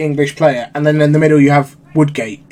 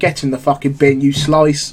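imitated mocking, put-down tone. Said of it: "I was like".

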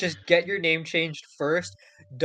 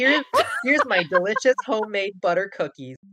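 higher, bright, gushing recipe-blogger voice. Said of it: "I'm becoming one of those people on, like, recipe sites that are like".

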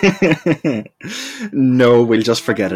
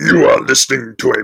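robotic ring-modulated voice, higher and louder; 4 semitones higher, 5 dB louder than usual. Vowing to take someone's job, the speaker tries a line in a robotic ring-modulated voice. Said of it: "Bring me a ring modulator at once".

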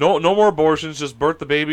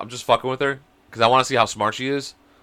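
plain

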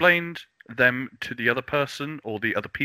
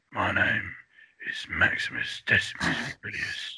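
put-on raspy voice, lower pitch, quieter; 5 semitones lower, 4 dB quieter than usual. Asked whether a raspy voice is sexy, speaker tries the Russell Crowe rasp. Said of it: "the Russell Crowe rasp".

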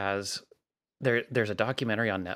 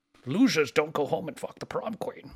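put-on Scottish accent, pitched higher; 6 semitones higher than usual. Quoting a movie line in an impression round: not very good Sean Connery impression. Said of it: "nobody has a very good Sean Connery".

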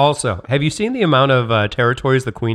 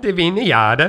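put-on Swedish accent, higher pitch; 7 semitones higher than usual. Saying a word aloud to the others in a put-on Swedish accent. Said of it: "that was Swedish".

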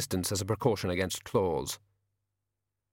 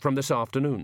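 ordinary delivery

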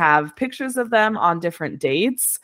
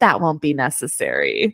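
put-on, eerie, really creepy, swooping pitch; 4 semitones lower than usual. Retelling a character's calm reply to threatening customers: imitating a creepy line. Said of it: "just really creepily says".

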